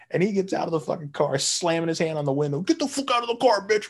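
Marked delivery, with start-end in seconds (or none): 2.6-3.9 acted-out shrill, unhinged, enraged yell, high-pitched. Telling how a driver whose car got hit jumped out, retelling an enraged yell. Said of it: "Like losing his fucking mind".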